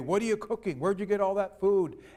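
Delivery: very loud, booming, demanding bellow. Telling a story, voicing the big husband questioning his wife: very loud voice. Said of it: "in a very loud voice".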